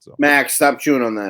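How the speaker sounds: loud yelling. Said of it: "Sorry, I'm yelling at my dog".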